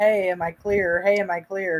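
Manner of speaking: ordinary talk, nothing marked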